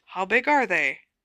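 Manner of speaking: quiet, hushed voice. Narrator reads a listener's question after a story, hushed voice. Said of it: "Asked Ron in a hushed voice".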